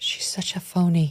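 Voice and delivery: unvoiced stage whisper.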